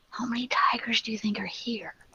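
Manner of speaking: very quiet, hushed, stealthy whisper. In the game, the sorcerer whispers back to Victor's question, whispering. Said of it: "The sorcerer whispers back".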